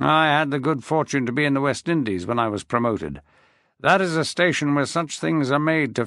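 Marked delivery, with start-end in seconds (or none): none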